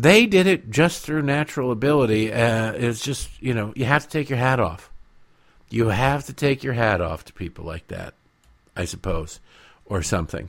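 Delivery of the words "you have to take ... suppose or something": quiet, plainly sarcastic voice. Talking to listeners about a politician's family, sarcastic. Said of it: "Can you feel the sarcasm?".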